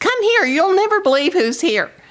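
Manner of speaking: shrill, high-pitched, excited yell. Retelling how a man called his wife to the door: imitating a man yelling. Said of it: "he yells at his wife".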